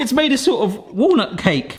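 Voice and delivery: high, sudden, surprised exclamation. Checking how the mix turned out while filming a video, surprised exclamation.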